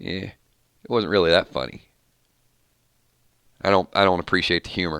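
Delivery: reluctant, grudging, unimpressed, dismissive tone. Imitating viewers who hated Negan, unimpressed by jokes: imitating grudging Negan haters. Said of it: "they're kind of sitting over there like".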